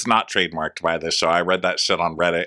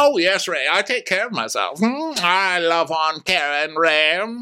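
very high mock impression voice. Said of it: "She goes".

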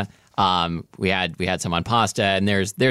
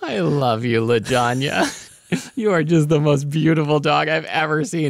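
high, doting, lovestruck, gushing voice; 7 semitones higher than usual. Speak to the dog named Lajanya, as an impression of Molly. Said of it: "This is my impression of Molly".

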